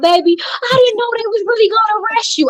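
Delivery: mock very high-pitched weeping, words cried out. Retelling what the crying mother said outside the jail: imitating mother crying. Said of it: "She standing outside crying".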